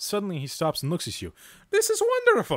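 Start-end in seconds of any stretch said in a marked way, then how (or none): 1.7-2.6 very high, loud put-on leprechaun voice. A minstrel stops reading aloud and looks at you, leprechaun voice. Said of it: "I gave him leprechaun voice".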